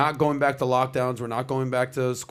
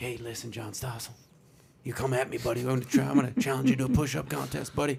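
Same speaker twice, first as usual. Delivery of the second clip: hushed, hissing whisper-shout; 5 dB quieter than usual. Imitating Biden challenging John Stossel to a push-up contest: imitating Biden's whisper shout. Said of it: "what's a whisper shout?".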